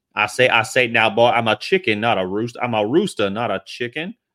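cartoonish rooster voice. Speaker asks the audience if they know him, then does Foghorn Leghorn voice. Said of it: "Do you guys know who Foghorn Leghorn is?".

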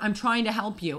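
usual speaking voice

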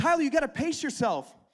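play-acted, high-pitched, called-out yell. Retelling a run when she called ahead to him: imitating her yelling. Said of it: "She yells up to me".

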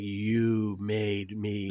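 voice heavy with acted-out menace. Retelling a dart player's line from a movie pub scene: imitating a menacing voice. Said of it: "the menace in his voice when he's like".

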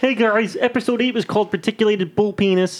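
high cartoon frog puppet voice. Asked to do his voice, announcing an episode title in Kermit the Frog voice. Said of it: "You do your Kermit frog voice".

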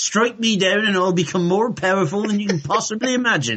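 put-on broad-ish Somerset West Country accent. Co-hosts revisit an accent bit from the podcast; West Country accent. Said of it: "I am from Somerset now".

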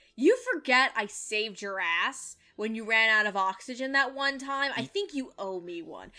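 grave, no-joke, dead-serious delivery. Retelling a character's line in a scene: imitating dead serious delivery. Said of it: "he's dead serious".

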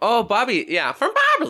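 put-on Minnesota accent. After a friend praises the accent, speaker slips into it: Minnesota accent. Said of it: "I hate that I can do that".

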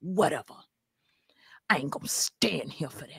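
hushed, breathy whisper. Impersonating the woman whose content they were discussing: impersonating her. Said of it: "That was a perfect impersonation".

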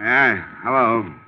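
put-on sounding hungover. Woken by a ringing telephone, the speaker answers the call, sounding hungover. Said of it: "You sound like you're in the crest of a hangover".

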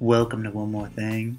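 put-on sexy Southern voice. Asked to do their sexy voice while saying a show welcome: put-on sexy southern voice. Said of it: "I don't know why my sexy voice is Southern".

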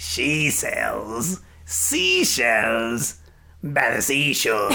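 growly burping voice. Speaker showing listeners what he sounds like, burping, growling voice. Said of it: "burping out and growling every single thing".

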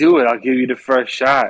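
pleading, begging, urging voice. Retelling a standoff as Bullseye, daring her to shoot: imitating Bullseye begging. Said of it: "He's begging her to".

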